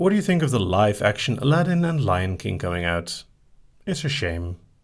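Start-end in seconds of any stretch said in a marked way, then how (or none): none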